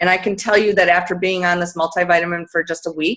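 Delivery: very fast, rattled-off talking.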